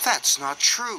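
crossly, sounding annoyed. Thomas answers Diesel at the quarry: crossly. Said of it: "said Thomas crossly".

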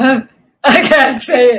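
loud, slow delivery broken up by giggles. Narrator reads the rhinoceros's reply to a porcupine in a story, giggling. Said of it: "giggled the rhinoceros".

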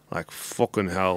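put-on Scottish accent, grumbling. Retelling a passenger, Conor McGregor, grumbling under his breath after sitting down. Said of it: "grumbling about something under his breath".

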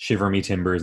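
ordinary delivery

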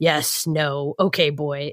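gruff, terse voice, each word dragged out very slowly. Retelling how Kratos gives his son one-word answers: imitating Kratos being gruff. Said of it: "being gruff and, like, giving him one-word answers".

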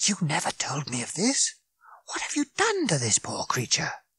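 sharp close hiss with swooping pitch. Reading a story, a character scolds a companion in his ear, with a sharp hiss. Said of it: "hissed Fenchurch in his ear sharply".

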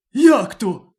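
sudden, high, loud exclaiming cry. Narrator reads the wolf answering the lion, crying out. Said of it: "скрикнув вовк".

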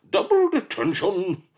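shrill, booming, high-pitched loud bellow. Narrator reads a character handing the secretary another detention: bellowing. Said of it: "Bellowed Miss Seethe".

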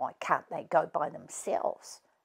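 very quiet, whispered mumble, muttered under the breath. Millie responds to her dad's instructions about bringing the others to the barn, muttered. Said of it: "muttered Millie".

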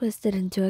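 ordinary delivery

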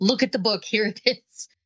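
ordinary talk

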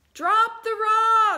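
very high-pitched, very loud, shrill yell. Retelling a story where someone on a bridge yells down to a man in the water, retelling a yell. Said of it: "somebody yells down to him".

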